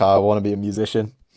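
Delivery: normal talking voice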